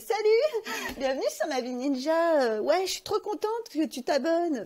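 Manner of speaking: very high, loud, coy, simpering voice. Imitating own past video greeting: imitating own past high-pitched voice. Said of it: "ma voix est deux fois plus aiguë".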